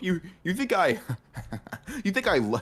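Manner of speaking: very high voice, breaking up with laughter through words. Teasing another speaker about making jokes, laughing while talking. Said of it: "sorry, I'm just laughing".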